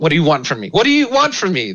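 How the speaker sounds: rising high-pitched outburst. Acting out what they yell at you, imitating a yell. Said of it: "They just yell at you".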